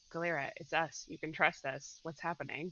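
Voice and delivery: soft, close half-whisper. Player's character speaking to someone who is upset, half-whispering in her ear. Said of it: "I'm gonna whisper in her ear".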